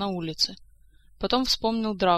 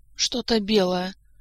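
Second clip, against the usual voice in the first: labored speech, struggling to get words out; 3 dB louder than usual. Kantor answers a voice asking what he sees, speaking with difficulty. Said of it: "с трудом выговорил Кантор".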